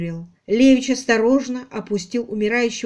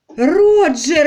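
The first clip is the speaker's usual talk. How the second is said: desperate, high crying out; 6 semitones higher, 7 dB louder than usual. Amid the struggle in the room, Muriel calls out to Roger, a desperate cry. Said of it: "отчаянно крикнула Мюриел".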